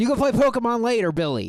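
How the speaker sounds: put-on high, sing-song, coaxing kid voice. Acting out a kid who runs up to a gaming kid: imitating a kid urging a friend to play. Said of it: "a kid runs up to him and taps him on the shoulder".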